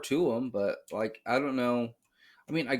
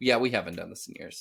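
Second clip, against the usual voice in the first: normal talking voice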